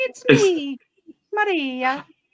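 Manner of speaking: loud, belted-out Italian mother voice. Retelling how a mother sounded, imitating mother's Italian-sounding voice. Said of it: "my mother'd be like".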